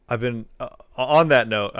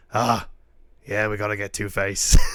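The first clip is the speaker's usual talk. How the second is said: put-on speaking with a British accent. Describing improv clips, the speaker imitates Batman in a British accent. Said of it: "still like in their British accents".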